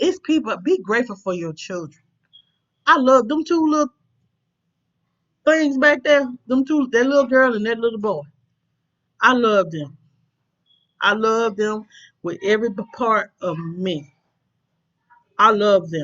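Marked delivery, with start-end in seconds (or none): 9.2-16.0 moved, emotional, slow delivery. Speaking about loving the two little children, getting emotional. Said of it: "And I'm getting emotional".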